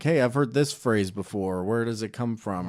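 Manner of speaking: plain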